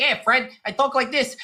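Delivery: put-on high, classic old-cartoon sidekick voice. Describing a cartoon character's first voice in a movie, Barney's voice from Flintstones. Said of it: "his first voice is like".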